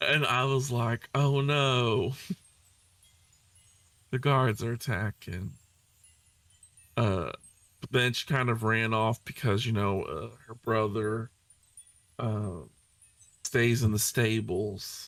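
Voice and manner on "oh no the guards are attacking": deliberately nonchalant delivery, feigned casual unconcern. Recounting voicing a character's warning while holding back laughter, deliberately nonchalant delivery. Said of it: "She's gonna sound so nonchalant".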